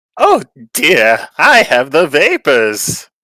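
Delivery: very loud, very slow, swooping, theatrical indignant affront. Asked for their best indignant voice, exclaiming about the vapors, indignant voice. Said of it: "Do do your best indignant voice".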